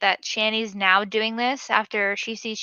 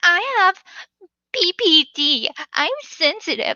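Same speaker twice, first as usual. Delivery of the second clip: mock, very slow, high, drawn-out teary whiny crying; 7 dB louder than usual. Acting out a person who tears up and protests when the chef yells orders at her. Imitating someone crying, whiny. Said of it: "Imagine the chef yelling orders at Shani".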